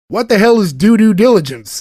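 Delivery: put-on Southern accent with the word "due" doubled. Speaker retells Harlan asking what due diligence is, in Harlan's southern accent. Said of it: "especially in a southern accent".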